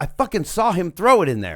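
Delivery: put-on livid cop voice, furious and swooping. Retelling what the cop said at the closet: imitating a furious cop. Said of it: "the cop's so fucking mad".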